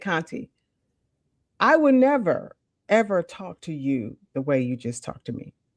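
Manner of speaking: hushed, low-key, very quiet delivery. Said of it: "very quietly".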